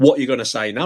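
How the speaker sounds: put-on aggressive man's voice. Retelling a man who walked past confronting them: imitating an aggressive man. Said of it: "Just got really aggressive straight away".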